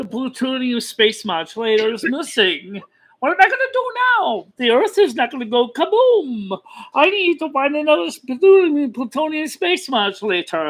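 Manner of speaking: high-pitched cartoon alien voice. Asked on the spot to do Marvin the Martian, doing a Marvin the Martian voice. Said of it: "Can you do Marvin the Martian?".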